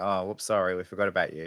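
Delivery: ordinary talk, nothing marked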